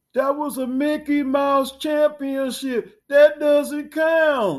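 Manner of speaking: very high, very loud, belted, dismissive rant. Discussing the Lakers' title, the speaker does a Rob Parker impression. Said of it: "I had to do my Rob Parker impersonation".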